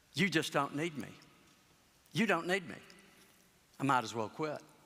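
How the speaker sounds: quiet, soft delivery. Speaker retelling what a man said after sitting back down, in a quiet voice. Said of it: "in a quiet voice".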